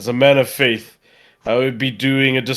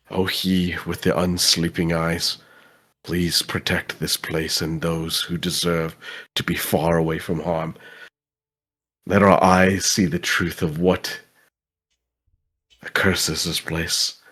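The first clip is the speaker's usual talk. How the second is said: hushed, soft whisper under the breath; 6 semitones lower, 4 dB quieter than usual. A player's character performs his ritual, whispering a prayer: whispered prayer. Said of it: "as I'm whispering that prayer".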